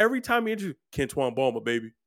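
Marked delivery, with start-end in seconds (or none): 0.9-1.9 put-on goofy country accent. Imitating a football player introducing himself: imitating a country accent. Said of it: "his big goofy ass and his country accent".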